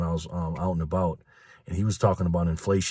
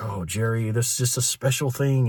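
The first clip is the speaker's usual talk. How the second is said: put-on sarcastic tone, higher pitch; 5 semitones higher than usual. Retelling a joking talk while buying organic fruit: imitating Karen being sarcastic. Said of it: "being sarcastic".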